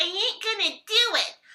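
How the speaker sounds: put-on American gangster accent, loud and slow. Hearing that gangsters in the Americas have interesting accents, the speaker imitates one. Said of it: "apparently they have interesting accents".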